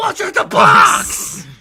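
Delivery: booming, very loud, very slow, drawn-out roar. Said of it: "somebody just shouts".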